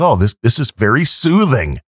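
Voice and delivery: ordinary talk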